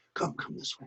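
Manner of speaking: low, hushed whisper with an urgent, pressing tone.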